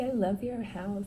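ordinary talk, nothing marked

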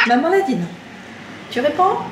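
loud, high scolding tone.

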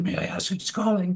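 normal talking voice

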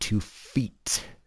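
emphatic, hard stress on "two feet". Listing measurements and noting the pronunciation, emphatic on 'two feet'. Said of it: "Note the emphatic pronunciation".

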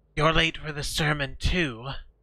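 salt-dry, salt-cold, hissed words. Narrator voices the man ahead of you, whose voice comes as a surprise: hissing. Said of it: "he hisses".

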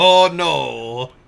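loud put-on partial German accent, drawn-out no. Quoting Solo's reply about streaming a game: imitating Solo, partial German accent. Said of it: "you gave him, like, a partially German accent".

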